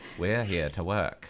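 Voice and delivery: put-on low voice with a British-sounding accent. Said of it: "Sounds British / low, low".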